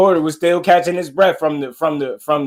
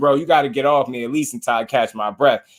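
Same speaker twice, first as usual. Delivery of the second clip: ordinary talk, nothing marked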